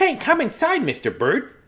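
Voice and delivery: high, swooping little storybook mouse voice. Reading a story aloud, retrying the mouse's line to the bird, in a mouse voice. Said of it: "I should pick a better voice for the mouse".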